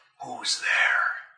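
gruff but soft hushed whisper. The game master voices an unseen speaker in a fountain, in a gruff but soft whisper. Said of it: "a gruff but soft whisper".

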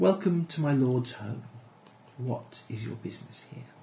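rich, full-bodied, gracious and welcoming voice. Voicing an elven woman who greets visitors: rich voice. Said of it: "in a rich voice says".

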